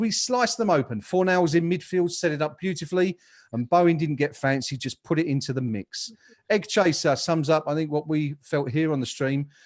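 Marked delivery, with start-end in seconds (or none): none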